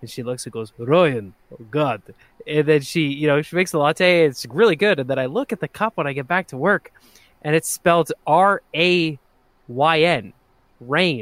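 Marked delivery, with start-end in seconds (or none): 0.8-2.0 put-on heavy, thick Russian accent, laid on. Retelling a barista reading a name: imitating thick russian accent. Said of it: "this thick Russian accent".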